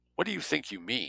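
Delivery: icy, cold, frosty, quiet voice. Jake questions the man who has just been speaking, icy. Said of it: "Jake asked icily".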